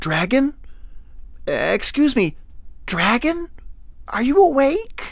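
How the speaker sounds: gentle, soft, very high-pitched voice. Narrator reading a man asking a sleeping dragon if it is awake, soft voice. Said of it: "he asked softly".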